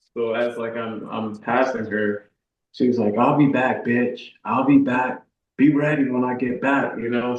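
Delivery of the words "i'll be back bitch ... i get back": mock-yelled menacing tone, screamed. Recounting a road-rage driver threatening him as he passed her, retelling a threatening yell. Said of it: "she just kept talking and like yelling and screaming".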